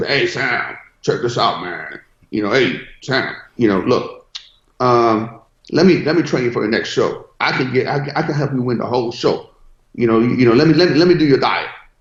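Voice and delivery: put-on thick old Mississippi accent. Retelling how a bodybuilder trainer offered to train him: old Mississippi accent. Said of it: "old Mississippi accent".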